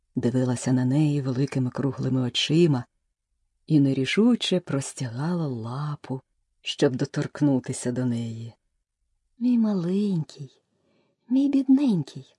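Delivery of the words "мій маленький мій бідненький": loving, soothing, tender, gentle coaxing tone. Alice speaking to a huge puppy, tenderly. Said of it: "лагідно заговорила Аліса".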